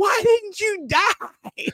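put-on very high, slow little-girl yell. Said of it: "the little girl yelling at Tobey Maguire".

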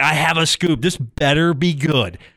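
put-on loud, urgent, insistent screaming. Retelling how the intern producer is screaming for attention: imitating someone screaming. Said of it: "screaming at me like".

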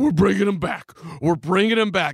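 mock grand stage proclamation, loud, fast, rattled off. Retelling how Krause grabbed the mic at the draft: Krause impression, storming announcement. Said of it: "Krause comes storming up on stage. He, like, grabs the mic. He's like".

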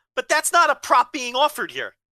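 loud, high-pitched yelling.

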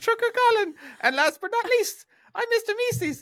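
clumsy, awkward put-on voice, pitched high. Reading out supporter names in a bad Mr. Meeseeks voice. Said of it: "Fuck, I'm never doing that again".

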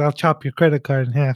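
normal talking voice

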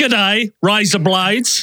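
amateur, put-on Australian accent. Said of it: "That's pretty good".

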